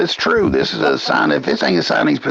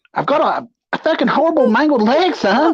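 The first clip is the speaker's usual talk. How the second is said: put-on ranting voice, higher pitch; 13 semitones higher than usual. Imitating Johnny Gobby ranting about his dog, Johnny Gobby voice. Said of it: "He's sounding like fucking Johnny Gobby".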